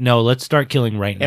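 usual speaking voice

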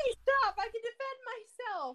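heavily emotional delivery. A character calls on another to stop, insisting she can defend herself, very emotional. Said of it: "very emotional".

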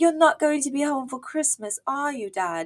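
put-on high, sad child voice.

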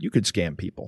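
low, soft, little evil voice. Voicing the little voice in the back of the speaker's head, as a little evil inner voice. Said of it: "that little evil voice is like".

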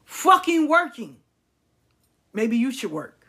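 mock irritated, voice rising. Complaining about a partner who calls at work: aggravated, rising voice. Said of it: "my voice go up, I get aggravated".

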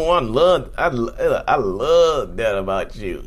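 slow, forced clenched-teeth talk, love drawn out. Explaining how people lie, the speaker demonstrates talking through clenched teeth. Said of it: "They will smile through clenched teeth".

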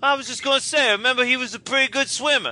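put-on horrible, thick New Jersey accent, high. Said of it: "he just goes".

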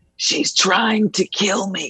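hushed, whispered voice. Talking so the baby nearby does not hear: whispering. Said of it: "I'm gonna whisper so hopefully Ruby doesn't hear me".

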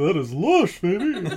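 put-on bear voice. Right after praising a co-host's bear voice, speaker repeats his line: bear voice. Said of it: "It's a good bear voice".

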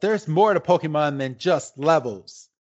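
normal talking voice

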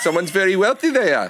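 put-on South African accent. Showing another speaker what the South African accent sounds like: put-on South African accent. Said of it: "complimentary and patronizing".

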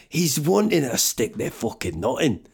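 poorly done, clumsy fake Scottish accent. Retrying a line about a man after botching it, bad scottish accent. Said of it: "What's going on with my accents?".

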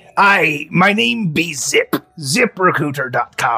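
put-on small piratey man voice. A small pirate man calls to you from the dock, in a piratey man voice. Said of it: "there's a small piratey man".

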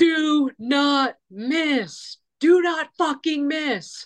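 very slow, high, stretched-out screaming. Retelling what they screamed at others in the wind, retelling a scream. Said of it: "And I'm screaming".

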